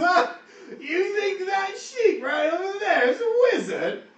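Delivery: very high orc voice, laughing through the words. Voicing an orc who laughs at the claim the sheep is a wizard: laughing while talking. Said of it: "and he starts laughing, he goes".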